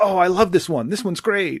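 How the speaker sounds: high, happy, gushing voice. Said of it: "very just positive and happy".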